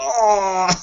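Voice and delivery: high, panicked yelp, freaking out. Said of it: "freaking out, mass hysteria".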